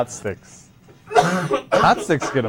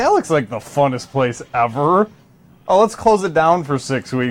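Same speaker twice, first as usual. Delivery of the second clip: ordinary delivery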